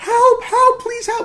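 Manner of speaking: very high, shrill, loud, human-sounding monster scream. Retelling a scary scene where a bear cries out, imitating a bear screaming help. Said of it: "it's this bear who's like".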